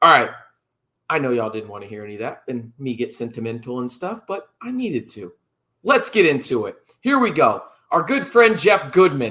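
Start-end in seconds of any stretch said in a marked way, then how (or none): 7.9-9.3 loud, sarcastic, tongue-in-cheek. A host introduces someone as a good friend, sarcastically. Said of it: "I say sarcastically".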